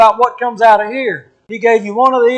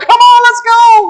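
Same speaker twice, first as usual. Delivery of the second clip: put-on very high, very slow, drawn-out eager child voice; 13 semitones higher, 5 dB louder than usual. Acting out a child outside the Disneyland gate pulling parents: imitating an excited kid. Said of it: "Just so excited outside the gate".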